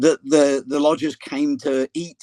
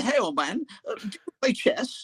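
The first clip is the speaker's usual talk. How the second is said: put-on posh voice, much higher, quieter; 8 semitones higher, 6 dB quieter than usual. Retelling what a man said to him, imitating a posh guy. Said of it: "he was a posh guy".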